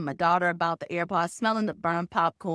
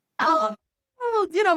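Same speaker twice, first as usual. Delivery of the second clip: shrill, very high-pitched yelling; 13 semitones higher, 3 dB louder than usual. Speaker retells his family yelling up from downstairs about his son, retelling a yell. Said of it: "they're yelling this at me from downstairs".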